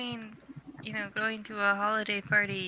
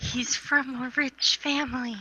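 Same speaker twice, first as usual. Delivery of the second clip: very slow, set-apart delivery; 3 semitones higher than usual. Voicing a character who half-whispers to the group: half-whispering. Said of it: "she whispered".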